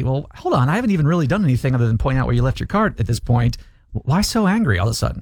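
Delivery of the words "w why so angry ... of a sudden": ordinary talk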